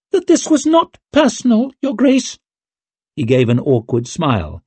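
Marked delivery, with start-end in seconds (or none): 0.1-2.3 very high, squeaky little voice. Narrator reading Gorst's words to His Grace: Gorst's squeak. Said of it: "he squeaked".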